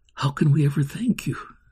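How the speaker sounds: ordinary delivery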